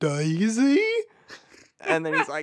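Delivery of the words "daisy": high, pitched-up cartoon character voice. Retelling a cartoon scene to another speaker: Goofy voice. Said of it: "you have the intonation down perfectly".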